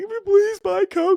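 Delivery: put-on very high, slow, pleading child voice. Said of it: "they're not at home begging".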